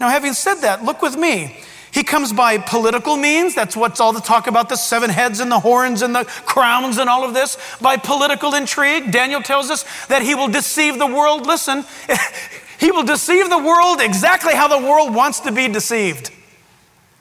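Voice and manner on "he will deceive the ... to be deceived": very sarcastic, with a laugh. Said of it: "I'm being very sarcastic".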